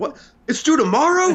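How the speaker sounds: panicking, very high, startled, disbelieving squeak. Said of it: "I get to see [name] on the phone like".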